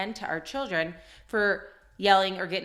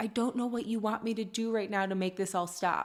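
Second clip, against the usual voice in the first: put-on tearful little girl voice, sobbing through words; 4 dB quieter than usual. Retelling what a little girl said after she started crying: imitating a crying child. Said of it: "she started crying".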